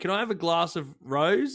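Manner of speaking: mock, put-on Australian accent. Acting out what she would say in true Aussie form: put-on Aussie accent. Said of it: "In true Aussie form".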